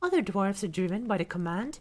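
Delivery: ordinary delivery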